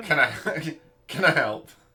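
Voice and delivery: very loud, high, put-on Yorkshire accent. Narrator voicing a stable hand who greets you, Yorkshire accent. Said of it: "He's that Yorkshire accent".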